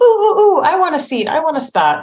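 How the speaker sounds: high-pitched, loud, eager clamoring.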